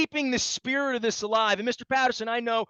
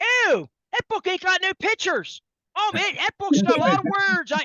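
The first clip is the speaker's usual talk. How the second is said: put-on, pitched-up Baltimore accent; 8 semitones higher, 4 dB louder than usual. Speaker imitates fans walking past his book at a convention, best Baltimore accent. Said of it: "in my best Baltimore accent".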